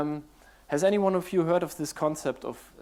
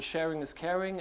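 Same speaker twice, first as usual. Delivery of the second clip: ordinary talk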